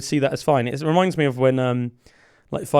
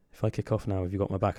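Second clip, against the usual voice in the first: put-on serious tone, lower and quieter; 5 semitones lower, 9 dB quieter than usual. Retelling what Nicky C asked when a drunk guy vaped in his face: imitating Nicky C, real serious. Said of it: "real seriously and went".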